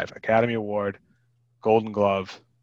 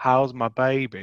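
horrible, worst-possible fake Southern accent; 3 semitones higher than usual. Retelling a scene, quoting Nicolas Cage in a horrible Southern accent. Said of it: "In like the most horrible Southern accent ever".

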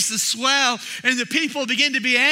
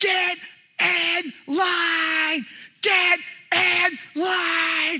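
very slow, high, drawn-out acted scream; 6 semitones higher than usual. Recalling an intense moment with a man yelling, retelling him screaming. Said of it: "I just remember him screaming".

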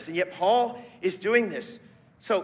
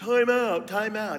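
slow, deliberate dad voice; 2 semitones higher than usual. Retelling what a dad used to say to calm things: imitating dad. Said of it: "my dad used to do".

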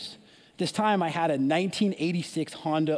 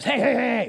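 loud, very raspy, drawn-out husky call; 6 semitones higher, 5 dB louder than usual. Retelling the lady in the car calling out to them, in a raspy, husky voice. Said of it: "really, really raspy, husky voice".

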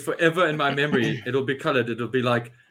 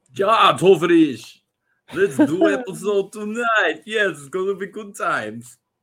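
fake Russian accent, higher pitch; 6 semitones higher, 3 dB louder than usual. Kicking off tonight's episode, where everyone does accents, in a fake Russian accent. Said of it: "We all do accents tonight".

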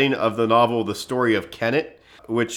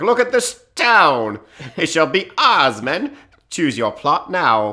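put-on British army general voice, sometimes higher; 5 semitones higher, 4 dB louder than usual. Acting out a British army general claiming a town for his men: imitating General William Howe. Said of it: "It was like".

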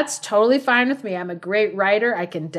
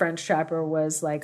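ordinary talk

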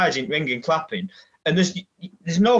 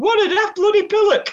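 very high, very squeaky shout; 3 dB louder than usual. Retelling how someone shouted at him as he walked out: dead squeaky shouted voice. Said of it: "shouted at him as well in this dead squeaky voice".

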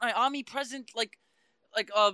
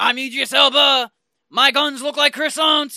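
put-on French movie-star impression, louder; 2 semitones higher, 12 dB louder than usual. Show a listener how the actor was the whole movie, in an Idris Elba impression, mock French. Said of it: "That was him the whole damn movie".

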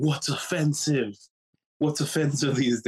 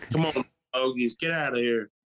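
put-on bossy cowboy voice. Acting out bossing the dogs around the house: bossy cowboy voice. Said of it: "I act like I'm a cowboy".

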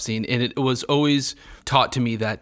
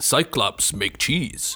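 put-on broken English. Discussing the Odyssey, the speaker mimics how the Cyclops talks, Cyclops broken-English voice. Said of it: "I think the Cyclops talks like that".

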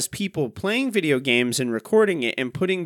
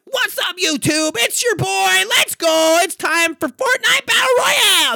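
amped-up, yelled, all-hype streamer delivery; 5 dB louder than usual. Mocking how YouTubers talk to kids watching games, screaming YouTuber impression. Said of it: "they talk like this".

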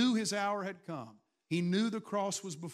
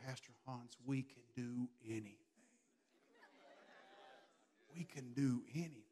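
put-on Georgian accent; 7 semitones lower, 13 dB quieter than usual. Retelling what someone said after the event: imitating a Georgian accent. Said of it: "in her beautiful Georgian accent".

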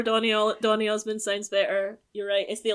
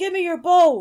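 high, loud, mock commanding voice. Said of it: "and then says".

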